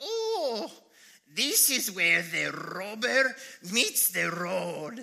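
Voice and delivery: put-on accent from Uganda. Fondly quoting a man who would get all excited and smile, imitating an excited Ugandan accent. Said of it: "with his Ugandan accent".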